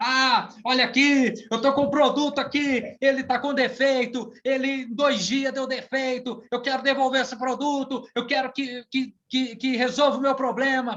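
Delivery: loud, high-pitched shouting, stumbling over words. Retelling an angry customer at a store: imitating a customer shouting. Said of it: "chegou gritando".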